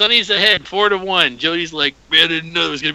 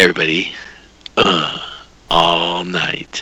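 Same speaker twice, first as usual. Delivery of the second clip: sexy, sultry, much lower radio DJ voice; 11 semitones lower than usual. Asked to do it once more, saying the bit in a sexy radio voice. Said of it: "Get it one more time".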